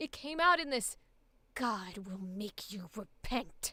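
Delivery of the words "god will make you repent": acted, low, slow, angry growl full of tension. Describing how she delivered the line, speaker imitates it: tense, angry growl. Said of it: "so much built up tension in the vocals from this anger".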